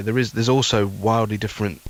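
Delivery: ordinary delivery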